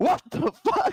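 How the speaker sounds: very high startled yelp. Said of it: "he's like".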